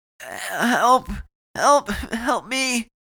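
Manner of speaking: hoarse, rasped, very high, very slow, drawn-out cry. Bleeding and fleeing an attacker, she rasps into the quiet hotel: rasped cry for help. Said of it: "she rasped into the quiet of the hotel".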